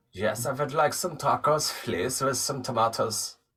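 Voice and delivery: fake German-accented English. Joking about ordering Taco Bell in accents, speaker orders in a German accent. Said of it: "do it like the German?".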